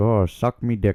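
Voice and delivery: loud, slow, drawn-out put-on Irish accent. The speaker pictures an irish guy saying the phrase, in an irish accent impression. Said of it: "But that was an Irish impression".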